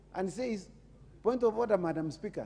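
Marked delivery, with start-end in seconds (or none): none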